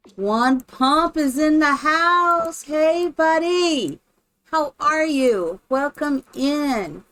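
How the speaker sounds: high, loud, slow, drawn-out call.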